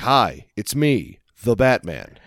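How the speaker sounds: plain, ungravelly voice, slow and unhurried. Quoting a Batman who just talks normally instead of gravel: Batman in a normal voice. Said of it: "He's like".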